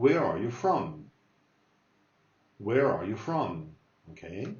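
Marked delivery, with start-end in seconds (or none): 0.0-1.1 everyday conversational speed, natural pace. Repeating a practice dialogue question for listeners, now at normal speed. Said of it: "let me say it normal speed".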